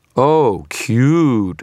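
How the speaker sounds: dripping with scorn. The narrator taunts Victor during a fire attack, dripping with scorn. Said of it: "my voice dripping with scorn".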